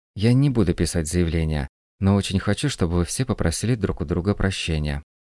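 plain

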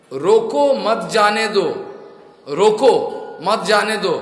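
slow, loud shouting.

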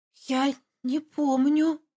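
stunned, shocked, hushed half-whisper. Told she walked out barefoot into the rain, she replies: half-whispering in shock. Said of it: "прошептала потрясенно".

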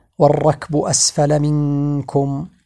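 normal talking voice

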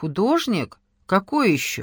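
plain

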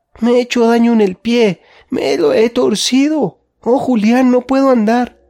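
very high, pained crying out. The little girl trips, hurts her foot, and cries out to julián. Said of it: "empezó a gritar".

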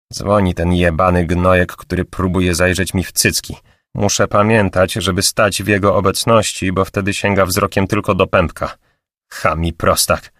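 plain

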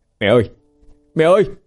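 startled, very high calling out. He jumps up, gripping the sickroom door, crying out to his mother. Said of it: "kêu lên".

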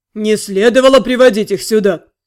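booming bass, sour tone. The university director speaks up behind Daniel, booming bass in a sour tone. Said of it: "пробасил кто-то. По характерному кислому тону".

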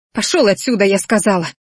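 ordinary delivery

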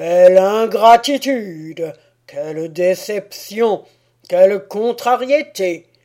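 loud, booming, thundering, furious enraged god voice. Narrator voicing the Almighty's outburst at the forest assembly, thundering voice. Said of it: "une voix tonitruante".

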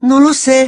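shrill, high, loud, terrified whimpering. Hermione answers a roaring giant who calls her name, terrified whimper. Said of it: "gimoteó Hermione, aterrada".

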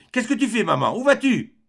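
loud, very high-pitched cry. A son seizes his mother in his arms as she heads for the door, crying out.

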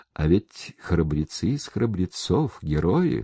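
ordinary delivery, nothing marked

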